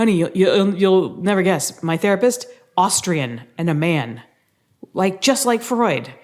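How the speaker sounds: acted-out excited voice, swooping and animated. Retelling how the husband came home: imitating an excited husband. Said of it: "he comes home all excited and he's like".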